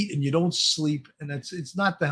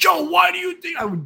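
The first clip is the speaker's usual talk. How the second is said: put-on very high, swooping, worked-up exasperated outburst; 12 semitones higher, 4 dB louder than usual. Recalling a co-investigator's contrary hypotheses, the speaker re-enacts confronting him: retelling an emotional outburst. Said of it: "I'm getting emotional now just talking about it".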